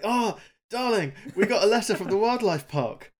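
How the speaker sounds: bright-eyed youthful eagerness. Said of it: "bright-eyed and youthful".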